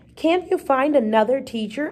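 ordinary delivery

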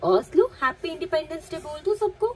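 coaxing call, high and loud.

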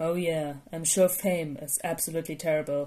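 low, dry, deadpan, sardonic sarcasm. A man answering a kid's complaint about being cosplayed, said dryly. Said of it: "Shota said dryly".

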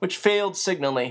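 ordinary delivery

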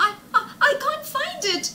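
very high, loud, stumbling stammer. A girl who can't find her homework tells the teacher, stammering. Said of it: "Linda stammered".

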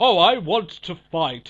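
very loud, booming, slow English accent. Mocking an idea for a wrestler's gimmick: Wade Barrett English accent. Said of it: "come out with his English accent".

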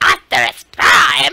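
put-on screechy robot voice. Showing how a character should really sound: imitating Starscream's voice. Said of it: "When it's more like".

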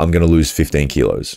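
normal talking voice

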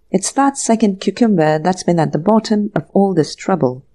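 ordinary delivery

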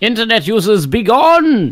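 shouting. Yelling at internet users from a rooftop: yelling from a rooftop. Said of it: "Upon the rooftop he yells".

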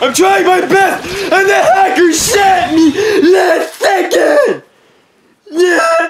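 very loud, very high, drawn-out raging yell. Player ending the episode after a hacker's last-second shot: raging. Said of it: "I know I'm raging".

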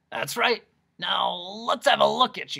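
hoarse, raspy, croaking voice, high and loud. Reading a story, the Doctor of Dissonance examines his visitors: raspy voice. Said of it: "[name], Doctor of Dissonance, ... which was so raspy it made you want to clear your own throat".

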